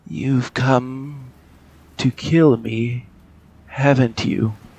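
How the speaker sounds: put-on strained, tired, weary young man's voice. A game master voices a young man calling from the darkness, strained and tired. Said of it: "A young man's voice, strained and tired".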